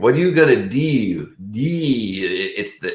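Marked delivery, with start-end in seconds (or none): 0.0-1.3 put-on Baltimore accent, odd "ooh" vowel in "you". Showing how people from Baltimore say their weird ooh sound, imitating a Baltimore accent. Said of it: "how they'll say like".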